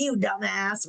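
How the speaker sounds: put-on mean old father voice. Describing the impostor-syndrome voice in their head, in a Red Foreman voice. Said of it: "the the old nasty dad that's like".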